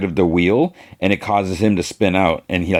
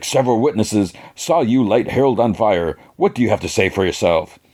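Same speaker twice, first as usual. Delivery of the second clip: ordinary delivery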